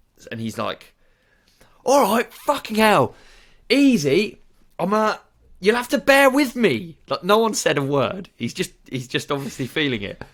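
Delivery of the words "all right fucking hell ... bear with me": very high, loud, riled-up agitated outburst, acted. Retelling how a customer at the till started kicking off: imitating an angry customer kicking off. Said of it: "So he started kicking off".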